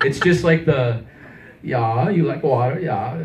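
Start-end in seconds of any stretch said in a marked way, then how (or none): 1.6-3.2 bad, mumbly, fake put-on Swedish accent. Showing the voice they called terrible after being urged to do it: bad fake Swedish accent. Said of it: "I don't even know if it's a Swedish voice".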